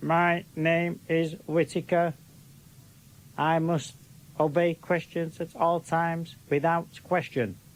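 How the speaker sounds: machine-like, metallic, conditioned-sounding voice. Acting out Whittaker, the man conditioned by Martians, Whittaker metallic voice. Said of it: "spoke in this metallic voice".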